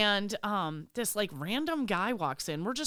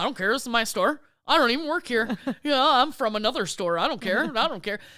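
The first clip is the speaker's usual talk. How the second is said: mock full-on sassy, dismissive tone; 2 semitones higher, 8 dB louder than usual. Retelling what was said to a slow customer at checkout: imitating a sassy retort. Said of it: "I was, like, super sassy to the lady".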